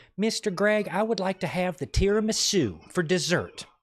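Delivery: put-on sweet, polite, high, slow little Southern girl voice. A restaurant manager recalls a six-year-old regular ordering dessert, imitating a polite southern girl. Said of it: "says it like so politely".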